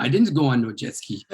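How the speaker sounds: normal talking voice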